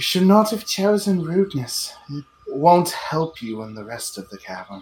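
bodiless, floating voice. Game master voicing a voice a player hears out of nowhere: disembodied voice from nowhere. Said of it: "you hear a voice out of nowhere that says".

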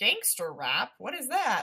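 put-on baffled, swooping, sing-song elderly voice.

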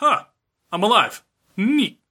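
put-on half-awake daze. Retelling a scene where Yusuke gets up after Botan thinks he's dead, imitating groggy Yusuke.

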